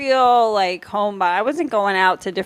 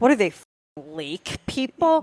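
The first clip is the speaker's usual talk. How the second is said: slow, disdainful, sneering, scornful tone. Retelling how mom mocked lake people: imitating mom's scornful tone. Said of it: "the tone of her voice".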